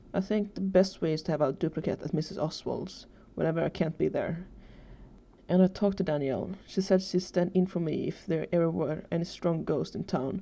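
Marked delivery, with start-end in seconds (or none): none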